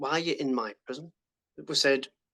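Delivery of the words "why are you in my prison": ordinary talk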